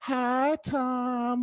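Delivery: put-on, high, coy, flirtatious tone. Retelling how a woman greeted the grandfather: imitating a flirty greeting. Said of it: "like that, you know, like, flirty".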